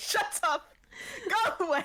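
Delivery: very high, cross, angry outburst. Describing how he yells at the glove, acting out an angry yell. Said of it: "He just yells at the glove like".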